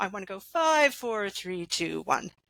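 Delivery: pitch and volume trailing downward. Speaker counting down numbers as an example: voice and volume falling. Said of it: "My voice is going down. My volume's going down".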